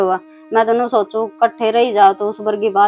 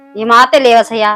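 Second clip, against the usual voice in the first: plain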